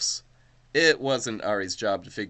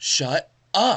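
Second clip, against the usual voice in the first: high, loud squealing voice; 8 semitones higher, 5 dB louder than usual. In a story read aloud, a girl teased about her crush answers her friend, squealing. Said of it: "she squealed".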